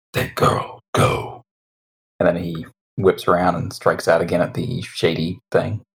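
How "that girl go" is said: put-on monster voice. Voicing a canine-like monstrous form turning toward Marie: [name]'s monster voice. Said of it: "I gotta see if I can get this voice".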